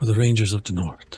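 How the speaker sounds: muttered quietly under the breath. Voicing a ranger attacking, muttering a battle cry: said under the breath. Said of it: "under my breath".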